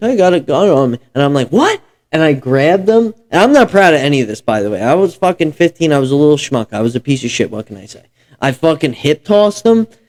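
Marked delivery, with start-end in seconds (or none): 0.0-1.0 high, shaky, trembling, frightened delivery. Retelling a rider on a bike saying he had a gun; imitating a shaky, scared voice. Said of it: "he said it like super shaky and scared".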